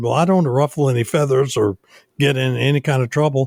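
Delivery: normal talking voice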